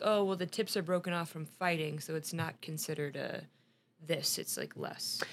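ordinary delivery

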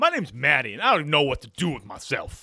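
low, uncouth comic voice. Imitating Maddie's put-on voice from a sketch: Tracy Morgan type voice. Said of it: "Like a Tracy Morgan type one".

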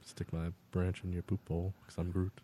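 very quiet, low, creepy whisper. Asked to do that voice with the Groot line: Vin Diesel voice doing Groot. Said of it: "Can you do that voice but with I am Groot?".

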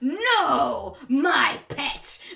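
loud, sudden, all-at-once belted cartoon cry. Retelling what a cartoon scene sounds like, imitating Snowman. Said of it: "Snowman's just suddenly like".

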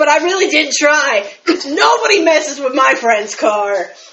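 put-on, out-of-breath panting, huffing and puffing. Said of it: "huffing and puffing back".

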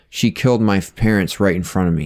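plain

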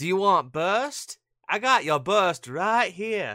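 Boston and New York mixed accent. Speaking in a Boston-New York accent mix that puzzles a listener. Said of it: "What is that accent?".

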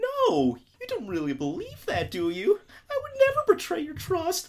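very high, swooping, squeaky, innocent puppy-dog whimper. Retelling how Gen plays dumb when caught: Gen playing dumb, puppy-dog voice. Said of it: "like a little puppy dog".

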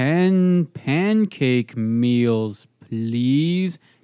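very slow, drawn-out speech. Retelling a man ordering pancake meals while the speaker waits, imitating him talking real slow. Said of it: "talking real slow".

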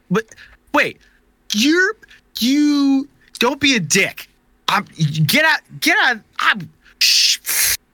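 very high, spluttering, tripping over every word. Retelling what a man yelled from a truck, imitating him spluttering over his words. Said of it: "he's just spluttering over his words".

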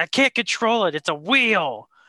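fed-up, exasperated, angry outburst. Retelling how Johnny Gargano got mad at a wheel: imitating Johnny Gargano getting mad. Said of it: "And he just gets mad".

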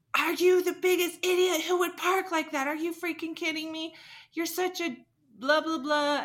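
very high-pitched screaming rant. Speaker retells a guy confronting them at their car, imitating a screaming man. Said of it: "he was just screaming in my face".

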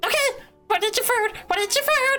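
squeaky, very high squirrel voice. Playing a squirrel questioning another character, in a squirrel voice. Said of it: "That was a very good squirrel voice".

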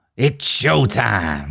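gruff put-on voice. Acting out a film quote for a guessing game: gruff put-on voice. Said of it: "it's a bit gruff, isn't it?".

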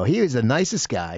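ordinary talk

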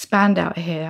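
ordinary talk

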